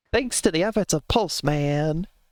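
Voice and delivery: put-on slight Southern accent. Recalling how a voiceover said the line, with a bit of a southern accent. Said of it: "Bit of a southern accent".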